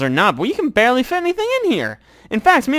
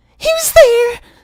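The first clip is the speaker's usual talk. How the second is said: put-on kid voice, higher and louder; 6 dB louder than usual. Voicing a hidden child calling out to intruders: Odette's child voice. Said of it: "if I gave her a voice".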